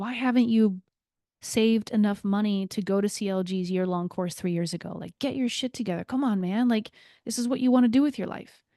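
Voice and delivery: mock angry, self-critical inner voice. Retelling what the critical inner voice said: retelling angry self-criticism. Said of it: "there was a little bit of anger".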